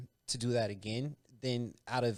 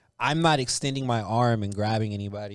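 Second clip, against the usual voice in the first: usual speaking voice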